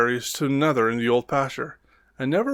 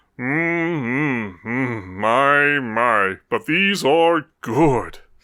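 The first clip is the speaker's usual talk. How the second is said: deep, grumbly, rumbly mumble. Narrator reads Buster's line as he sits eating berries; deep, grumbly, rumbly mumble. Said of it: "he mumbled in his deep, grumbly, rumbly voice".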